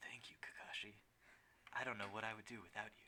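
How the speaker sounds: soft asmr-style whisper. Playing the game, speaker voices Guy whispering in Kakashi's ear, ASMR-meme style. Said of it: "I'm gonna do the A S M R meme".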